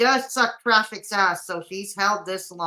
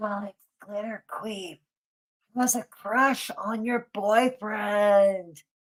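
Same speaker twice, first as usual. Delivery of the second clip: soft, breathy ASMR tone. Reading out the next clip in an asmr voice. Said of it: "I'm do this in A S M R voice".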